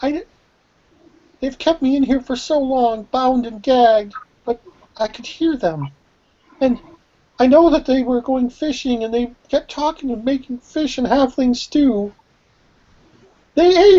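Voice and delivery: very high, near-tears outpouring, on the edge of crying. A game master voices a rescued captive speaking to the party: crying, near tears. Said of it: "and she starts crying".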